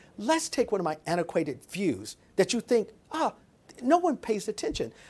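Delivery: ordinary delivery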